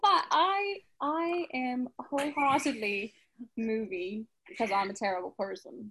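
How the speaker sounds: fake, put-on British English accent. Answering book or movie in character as J C: put-on British accent. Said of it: "talk in a British accent".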